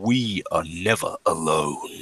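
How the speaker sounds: very deep, low, slow, measured radio voice. Running a game, voicing another speaker heard over the radio, deeper. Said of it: "this one, a uh, bit deeper".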